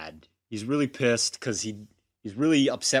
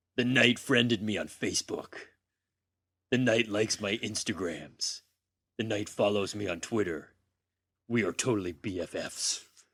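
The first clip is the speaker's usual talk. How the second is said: dark, gritty vigilante narration voice, quieter; 2 semitones lower, 4 dB quieter than usual. Reading a diary line from a comic in the Rorschach voice. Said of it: "the Batman Rorschach voice".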